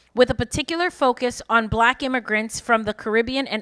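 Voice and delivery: ordinary talk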